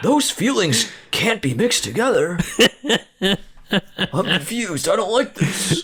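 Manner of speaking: very high, baffled, generic audience-member voice. Mocking a horror-comedy as a confused viewer: generic audience voice. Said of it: "our generic audience voice".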